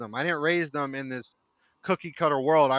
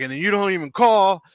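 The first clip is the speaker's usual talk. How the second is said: reproachful, accusing shouted delivery; 4 semitones higher, 4 dB louder than usual. Retelling the son calling about something: imitating son yelling. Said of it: "he called to yell at me".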